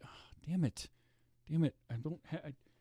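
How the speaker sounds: high, weepy, faltering crying voice with broken-off words. Retelling own reaction to a movie scene: imitating own past crying. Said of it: "Bella's trying to figure out why I'm getting upset".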